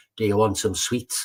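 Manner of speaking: plain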